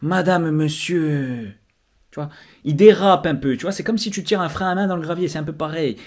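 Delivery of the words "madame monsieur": slow, unhurried, sliding, drawn-out delivery. Imitating a politician who takes his time: imitating Simeone, slow drawn-out. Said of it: "il prend le temps de".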